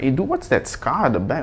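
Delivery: ordinary delivery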